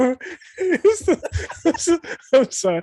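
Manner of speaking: very high, stumbling through laughter. Apologizing while still amused by Clip Watchers, laughing while talking. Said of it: "I'm still laughing at Clip Watchers".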